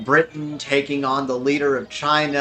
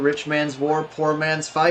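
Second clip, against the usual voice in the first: ordinary talk, nothing marked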